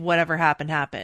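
ordinary delivery

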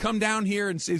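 put-on, high, shrill scream. Retelling a woman screaming up at another woman's window, imitating someone screaming. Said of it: "now she's underneath the other woman's window screaming".

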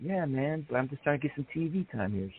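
hushed, near half-whispered aside. Retelling a wrestler answering an official quietly: imitating Chavo half-whispering. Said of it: "almost like he's whispering to him".

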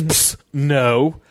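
mock offhand, dismissive brush-off. Retelling how a heckler answered a question: imitating a dismissive reply. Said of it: "so dismissively just goes".

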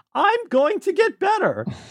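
very high, swooping, sing-song voice. Speaker showing how her mom impersonates a character: impression of Satsuki and Mei's mom. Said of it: "She does a really good impersonation of Satsuki and Mei's mom".

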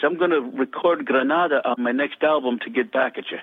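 thick, full Irish brogue. Speaker retelling a friend's phone call, Ronan's full Irish brogue. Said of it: "The full Irish brogue".

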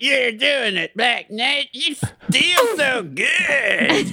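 robotic voice, very high and very slow. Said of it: "Coming out of a robot".

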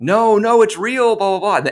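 very high, shrill screaming, stretched out. Telling a story, quoting the mom's outburst: retelling mom's screaming. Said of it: "my mom just started screaming".

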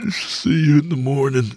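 yawning, words half-formed. Narrator drifting off to sleep, saying goodnight, speaking through a yawn. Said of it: "Through a yawn, the words came out half-formed".

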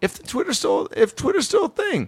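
voice shooting very high, swooping and rising. Predicting a nephew's football future and daring the other to tweet: voice going super high. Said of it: "my voice got super high right there".

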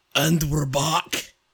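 loud, high put-on Scottish accent, belted out. Redoing the show's intro after it was criticized, in a Scottish accent. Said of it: "Is it better when I do it in a Scottish accent?".

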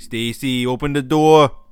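just a touch of Boston. Playing the cops knocking on Stacy's door in a made-up scene: a little Boston accent. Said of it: "I'm a little Boston with that one".

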